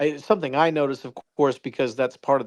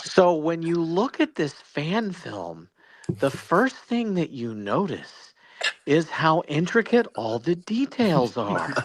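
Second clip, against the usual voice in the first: animated voice with swooping, lively pitch changes; 3 semitones higher than usual. Doing an impression of a fellow guest for the others: imitating Jonathan Lane. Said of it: "[name] does a great impersonation of me".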